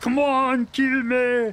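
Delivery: slow, drawn-out, bad Austrian accent. Quoting a line from the Predator, bad Arnold Schwarzenegger Austrian accent. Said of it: "This is me doing a bad impression of an Austrian accent".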